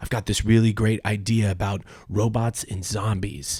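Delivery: normal talking voice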